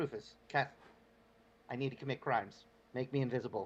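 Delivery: soft half-whisper, kept hushed. Speaking in character from a cart to a companion: half-whisper. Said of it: "I'm gonna whisper to Krufus".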